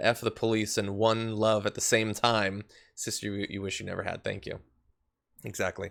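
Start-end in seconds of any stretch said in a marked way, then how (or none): none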